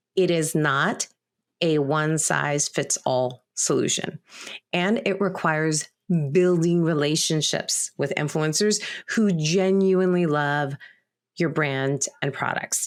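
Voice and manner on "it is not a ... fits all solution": slower, measured, deliberate, every word weighed. Presenter repeating a point about merchants and creators, repeating slower. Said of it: "repeat that and say it slower".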